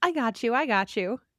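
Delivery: ordinary talk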